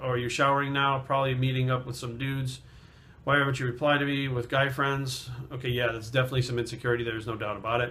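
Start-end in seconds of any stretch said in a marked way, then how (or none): none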